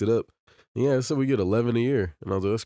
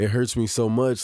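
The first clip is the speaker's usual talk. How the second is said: ordinary delivery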